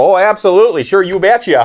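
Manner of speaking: put-on, played-up pleasant Midwestern accent. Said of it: "just being the good Midwestern that I am".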